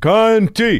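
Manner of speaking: high, loud heckling yell.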